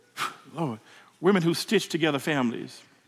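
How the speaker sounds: low, soft, halting voice, choked with emotion.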